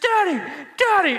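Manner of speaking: very high, terrified, frightened cry. A father retells his child waking at night outside the tent, retelling a terrified cry. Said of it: "I hear this very terrified voice".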